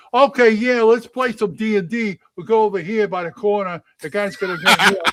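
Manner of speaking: thick New York accent. Showing they could do an accent all day, in a deep new york accent. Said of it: "that deep New York accent".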